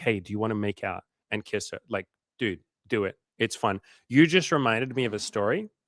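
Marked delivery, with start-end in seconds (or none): 0.0-1.0 hushed whispering voice. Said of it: "just whisper".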